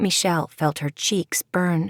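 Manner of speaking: ordinary delivery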